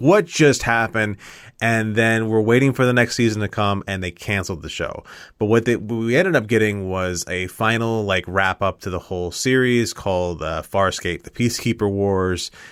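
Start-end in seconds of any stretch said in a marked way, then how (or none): 0.0-1.2 shouting loudly. Retelling watching a show with a buddy, yelling at the tv. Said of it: "We're both yelling at the T V like".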